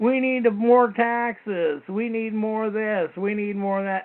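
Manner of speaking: slow, mock whining tone.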